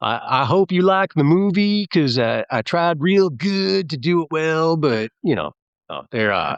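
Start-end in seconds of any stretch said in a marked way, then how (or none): 0.0-4.8 high, slow, fake put-on American accent. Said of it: "This American accent's amazing".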